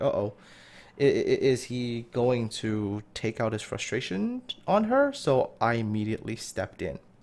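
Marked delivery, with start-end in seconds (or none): none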